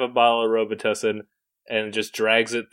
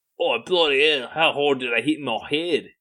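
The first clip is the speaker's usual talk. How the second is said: put-on slight Australian accent; 4 semitones higher than usual. Quoting a movie character who just woke after hitting his head: Australian accent. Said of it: "I think it's still Australian".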